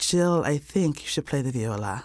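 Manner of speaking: put-on clumsy, horrible Bulgarian accent. Retelling what Romy said at her first lesson, in a horrible Bulgarian accent. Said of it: "That's a horrible Bulgarian accent".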